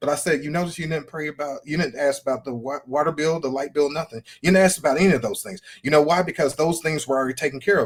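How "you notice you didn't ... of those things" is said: normal talking voice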